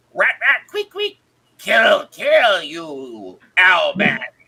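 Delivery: loud, drawn-out, hissing rat-creature voice. Storyteller voices a rat creature baring its teeth at Owlman, hissing rat-creature voice. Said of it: "bares his teeth, the two oversized front incisors as he hisses, and then talks".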